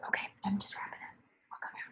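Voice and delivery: quiet whispering. Speaker wrapping up a late group call with participants, whispering. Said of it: "I'm whispering".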